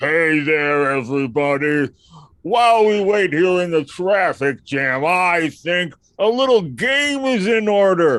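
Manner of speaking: bellowing beast voice, very loud, very slow. Playing a Minotaur greeting everybody, in a Minotaur character voice. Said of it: "I'm gonna do a Minotaur voice".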